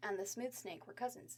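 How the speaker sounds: plain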